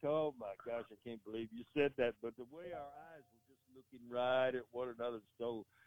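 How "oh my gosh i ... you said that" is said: put-on laughing speech, quieter. Retelling a wrestler who couldn't stop laughing: imitating someone laughing while talking. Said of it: "he couldn't stop laughing".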